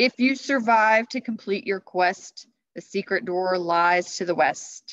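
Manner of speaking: very loud, thundering, booming voice. Narrating a story, the knight speaks again to Jack, booming Christmas Knight voice. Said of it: "The Christmas Knight's voice boomed again".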